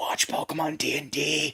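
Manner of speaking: hushed, secretive whisper close to the ear. Imagining someone whispering into another's ear, whispering in his ear. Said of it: "he just whispers in his ear".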